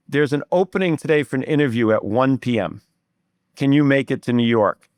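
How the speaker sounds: normal talking voice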